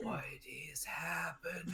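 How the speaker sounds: very quiet, high, hushed whisper. Voicing a character who leans toward another character: whispering.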